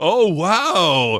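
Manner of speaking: loud, belted, happy exclamation. Mimicking how a wrestler acts in his gimmick: imitating Michael Lockwood sounding happy. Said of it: "he was all happy".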